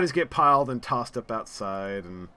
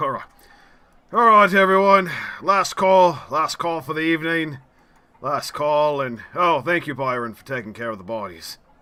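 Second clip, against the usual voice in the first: loud, put-on hard-man tough-guy voice; 3 semitones higher, 6 dB louder than usual. Voicing a man who has just wiped tears from his eyes, put-on tough guy voice. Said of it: "he puts on his tough guy voice".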